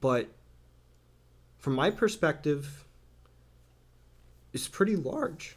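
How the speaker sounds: voice breaking and cracking mid-line. Talking about the support they receive, voice breaking. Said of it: "sorry, my voice broke".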